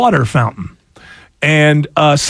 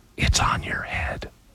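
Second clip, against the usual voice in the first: put-on under-breath mutter, quieter. Retelling a girl's reply during a school play: imitating someone muttering under breath. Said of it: "very under her breath and very barely points".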